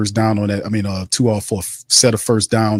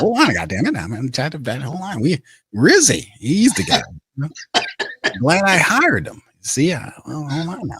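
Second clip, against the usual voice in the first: rough, raspy put-on character voice, pitched up; 6 semitones higher than usual. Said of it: "I got the rest the raspy part".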